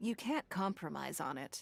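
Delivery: plain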